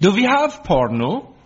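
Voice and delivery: put-on high-pitched Danish accent. A speaker retells what the new au pair asked while flicking channels, in a put-on Danish accent. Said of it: "said in her best Danish voice".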